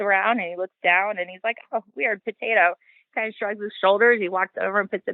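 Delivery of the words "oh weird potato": mock casual indifference, higher. Retelling how another person reacted to a thrown potato: imitating a nonchalant tone. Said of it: "he's so nonchalant".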